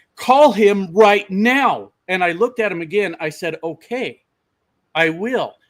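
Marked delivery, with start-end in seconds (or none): 0.2-1.9 loud, slow yelling, each word drawn out. Retelling a man on his truck's step demanding a call, imitating someone yelling. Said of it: "starts yelling at me".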